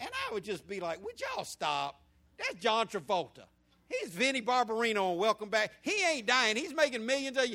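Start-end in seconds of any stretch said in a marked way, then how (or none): 1.0-7.5 heavy, loud, sing-song mocking scoff. Retelling mocking mom and sister crying at a movie: retelling own past mocking. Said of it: "I would just mock them heavy for crying".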